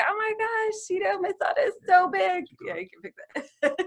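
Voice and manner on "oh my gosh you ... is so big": high mock tearful wail, proud and weepy. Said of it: "just me like".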